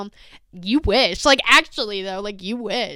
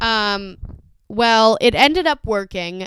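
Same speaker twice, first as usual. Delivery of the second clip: normal talking voice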